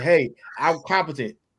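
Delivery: ordinary talk, nothing marked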